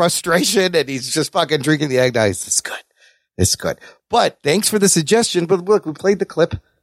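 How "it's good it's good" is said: mock muttering under breath, lower and quieter. Retelling a movie scene of someone drinking eggnog: imitating Clark muttering under his breath. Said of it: "under his breath".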